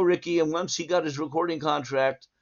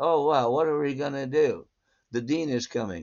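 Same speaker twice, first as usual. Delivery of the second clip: play-acted, bone-dry, unfussy delivery. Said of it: "Rick was the, the deadpan of all time".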